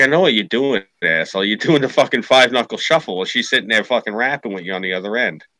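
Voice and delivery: ordinary talk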